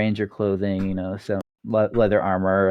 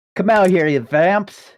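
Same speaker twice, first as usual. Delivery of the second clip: shouted call-out, very high; 11 semitones higher, 6 dB louder than usual. Voicing a ranger leader calling the hiding players out: Ranger leader shouting. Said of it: "just shouts, shouts at you and says".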